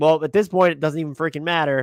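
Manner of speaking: ordinary talk, nothing marked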